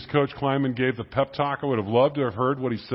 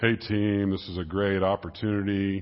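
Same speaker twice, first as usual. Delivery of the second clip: passionless, unenthusiastic delivery; 6 semitones lower than usual. Showing how not to give a team pep talk, in a flat monotone voice. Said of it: "You can't give a good pep talk with a monotone voice like this".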